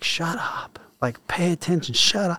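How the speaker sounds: acted-out mild scolding yell, high pitched. Recalling turning around in a platoon to yell at someone not paying attention: retelling a yell. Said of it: "I yelled at that person like".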